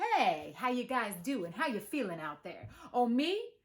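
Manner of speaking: relaxed, cool, laid-back, effortlessly hip tone. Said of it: "transform into a very cool and hip person".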